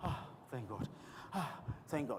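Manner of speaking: soft, low, breathy relieved sigh.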